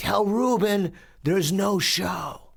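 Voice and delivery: very high, drawn-out yell at full lung power. Retelling calling out across a mall: imitating yelling as loud as possible. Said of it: "I yell as loud as I can".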